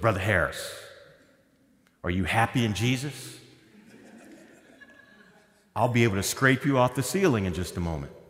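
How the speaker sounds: Texas way of talking. Retelling what a man in texas said to brother harris, in a texas accent. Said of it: "so they talk like this in Texas".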